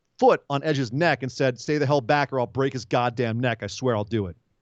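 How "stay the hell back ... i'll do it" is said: plain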